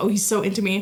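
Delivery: normal talking voice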